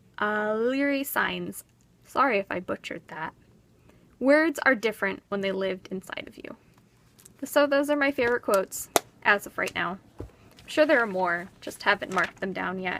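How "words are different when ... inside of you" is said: ordinary delivery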